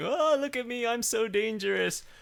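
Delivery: very high, loud, drawn-out, showy squeal. Mocking a companion leaning out of the tardis: imitating Clara. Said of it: "almost leaning out of the tardis, going".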